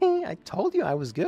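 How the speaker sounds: tense, strained voice. Voicing Uchet as the player thanks her for the mural, in a strained high Uchet voice. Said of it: "You can tell my voice is starting to go".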